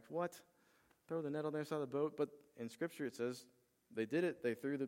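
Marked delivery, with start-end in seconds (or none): 0.1-2.1 mock weary, flat, exasperated, frustrated disbelief. Retelling tired fishermen's reply after a night out: imitating frustrated fishermen. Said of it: "they're tired, they're frustrated".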